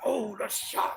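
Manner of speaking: terrible slow, low, rough put-on voice. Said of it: "that's a terrible voice".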